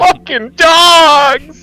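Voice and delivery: acted yelling. Waking the camp in character: in-character yelling. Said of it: "I'm yelling".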